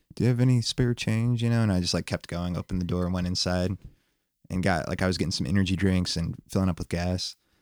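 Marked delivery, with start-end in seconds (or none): 0.2-1.4 mild, unassuming, low-key voice. Retelling a man at a gas station door, imitating his quiet, soft-spoken voice. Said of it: "really quiet, like soft-spoken".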